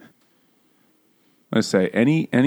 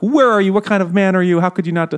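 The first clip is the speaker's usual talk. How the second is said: high-pitched, rapid yelling. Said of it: "rapidly yelling at him".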